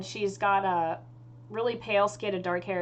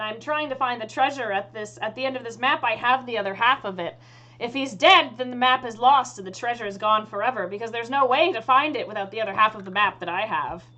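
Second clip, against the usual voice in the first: ordinary talk, nothing marked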